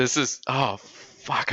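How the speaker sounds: voice catching, choking up, high, "oh" drawn out. Reacting to a scene while wiping away tears: choking up, near tears. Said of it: "I'm gonna cry".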